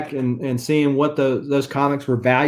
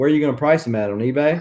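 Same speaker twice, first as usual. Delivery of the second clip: mock, kind of sarcastic tone. Telling a story about a cover collector, retelling his own sarcastic question. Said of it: "Kind of sarcastically".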